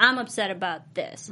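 ordinary talk

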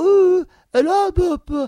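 shrill, high, loud fake British accent. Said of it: "she's talking with this British accent".

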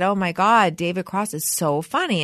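normal talking voice

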